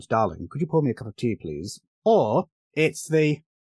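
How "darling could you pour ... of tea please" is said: put-on upper-class British accent. Joking about the two British accents in American films: Hugh Grant posh British accent. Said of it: "it's either the Hugh Grant posh accent".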